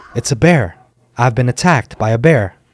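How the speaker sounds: ordinary delivery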